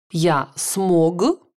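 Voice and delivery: ordinary talk, nothing marked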